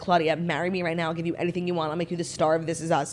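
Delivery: normal talking voice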